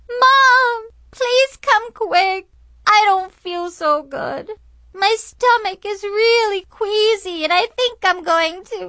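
mock very high whining yell, word drawn out. A narrator reads their past self calling to Mom down the hall, yelling in a whiny voice. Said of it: "yelled down the hall in a really whiny voice".

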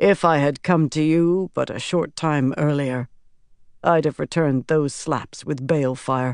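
ordinary delivery, nothing marked

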